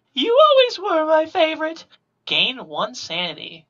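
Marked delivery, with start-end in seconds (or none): 0.2-1.9 put-on very high, sweet little old-lady voice. Game host voicing a phone caller after a dice roll, sweet little granny voice. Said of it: "A sweet little granny voice says".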